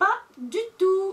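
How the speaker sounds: emphatic, loud, high, slow exclamation.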